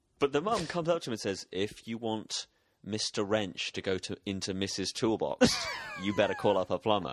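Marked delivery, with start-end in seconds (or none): none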